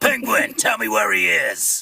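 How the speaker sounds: dark, sinister voice, creaky, rough-edged and swooping. Retelling an attempt at doing Batman in a scene: dark, sinister Batman voice. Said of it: "I tried to do a Batman".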